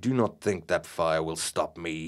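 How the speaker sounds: sneering with venom. An advancing colleague confronts two people standing by a fire, sneering venomously. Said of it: "he sneered venomously".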